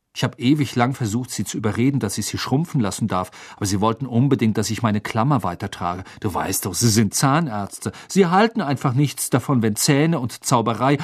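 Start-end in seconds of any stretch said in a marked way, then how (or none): none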